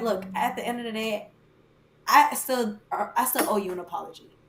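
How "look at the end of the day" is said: ordinary delivery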